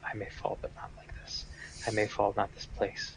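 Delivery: muttering under breath. Asked whether anyone else wants to act, a player speaks: muttering under breath. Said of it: "I'm just muttering under my breath".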